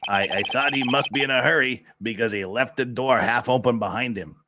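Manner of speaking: acted gravelly voice. Voicing the witness testifying before the court, gruff, growly Sawhit voice. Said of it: "We'll give him a gruff, growly little voice".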